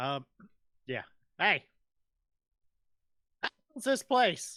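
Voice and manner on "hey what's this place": shouting, much higher. Coming around a street corner in a role-play, yelling. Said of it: "What are you yelling about?".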